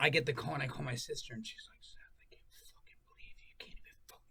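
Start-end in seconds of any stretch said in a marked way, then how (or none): 1.8-4.2 furious, barely whispered telling-off tone. Retelling a phone call with a furious sister: imitating furious sister. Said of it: "everyone's furious".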